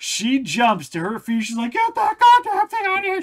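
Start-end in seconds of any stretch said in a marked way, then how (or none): 1.7-3.2 shrill, panicked, very high, loud scream. Retelling how mom woke to a fish thrown at her: imitating someone screaming. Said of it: "She's screaming the top of her".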